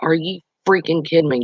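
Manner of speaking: ordinary delivery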